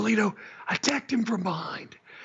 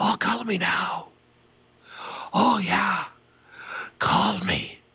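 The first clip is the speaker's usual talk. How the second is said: put-on breathy, winded Irish accent, much lower pitch; 3 semitones lower than usual. Mocking a man's accent, doing a breathy Irish sex-line voice. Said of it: "he always sounds so winded and breathy".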